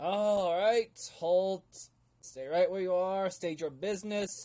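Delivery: loud shouting, barked and pitched way up. Narrator voicing a man calling out orders to arrivals, shouting orders. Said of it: "as he shouts".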